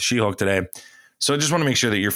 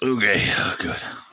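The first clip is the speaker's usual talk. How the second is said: put-on monster voice, slower. Trying out a voice and asking a friend's opinion, in a Hormone Monster voice. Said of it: "how you sound like the hormone monster".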